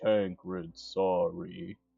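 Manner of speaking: very quiet. Once out of earshot of the others, a character speaks to Tancred, very quiet. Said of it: "you just hear really quietly".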